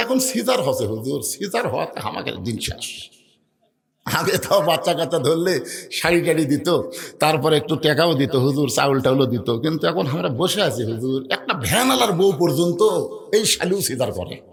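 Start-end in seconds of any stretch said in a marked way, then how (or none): none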